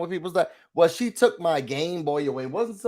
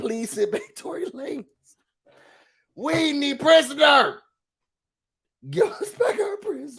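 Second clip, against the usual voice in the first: very high, pleading, begging voice; 9 semitones higher than usual. Acting out Canada asking for someone back: mock pleading as Canada. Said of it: "Y'all think that Canada gonna be like".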